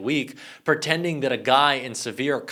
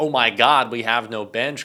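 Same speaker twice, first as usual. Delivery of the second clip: mock panicked voice, louder; 5 dB louder than usual. Mocking Republicans who are panicking about their candidates: imitating panicking Republicans. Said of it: "Republicans are panicking and saying".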